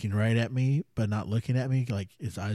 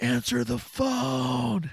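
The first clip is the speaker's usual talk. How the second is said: mock shrill, ragged, loud, high scream, stretching "phone"; 14 semitones higher than usual. Retelling a guy in the bunkhouse screaming in the night, retelling a loud scream. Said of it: "Just like loud".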